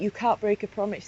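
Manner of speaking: ordinary talk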